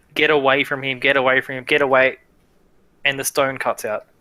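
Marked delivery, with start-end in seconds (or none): 0.1-2.1 sobbing, crying, begging, pleading tone. Game master voicing Yuki through the stone into a player's ear, Yuki crying. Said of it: "You hear Yuki crying into your ear".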